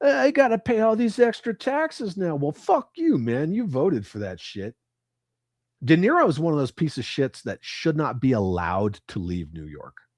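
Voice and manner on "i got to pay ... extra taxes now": very high-pitched, whining, fake sobbing voice. Mocking a reaction to an election result: mock crying as De Niro. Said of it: "De Niro's over there crying like".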